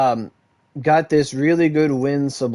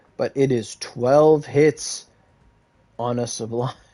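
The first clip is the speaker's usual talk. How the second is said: slow, deliberate, spelled out word by word. Explaining a weapon stat to an Axe main, speaking slowly on purpose. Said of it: "I'll say this slowly".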